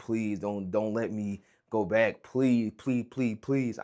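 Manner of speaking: imploring, begging, pleading with repeated please. Retelling own past words while crying in the bathroom at work: retelling own begging and pleading. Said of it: "I'm begging and pleading to whoever is listening".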